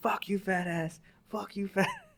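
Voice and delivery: shrill, very high screaming, acted out. Retelling how a boy on his foot locker yelled at his rackmate, retelling a scream.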